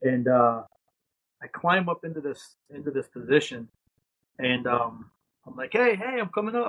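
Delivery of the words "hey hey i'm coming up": put-on shouting, higher pitch. Retelling climbing up into a gun position under fire: retelling own yell. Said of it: "I'm yelling to the guy".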